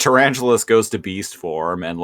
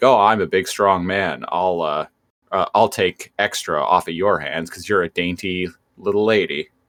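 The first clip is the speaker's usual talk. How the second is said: ordinary delivery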